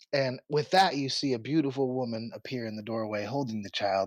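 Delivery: ordinary delivery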